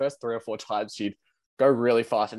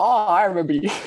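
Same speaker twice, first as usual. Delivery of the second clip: loud, high-pitched yelled-out call; 9 semitones higher, 8 dB louder than usual. Telling of meeting someone wrongly thought familiar, retelling how the speaker yelled out. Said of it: "And I yelled out".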